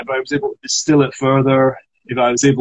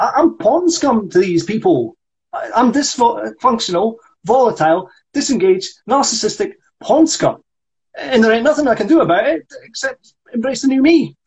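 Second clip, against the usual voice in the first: very high-pitched squirrel character voice; 8 semitones higher than usual. Told to reinvest in it, the actor speaks a character's monologue in red squirrel voice. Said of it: "reinvest in the red squirrel voice".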